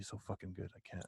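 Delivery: mock muttering under breath. Retelling a father watching a game: imitating dad muttering under breath. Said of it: "under his breath going".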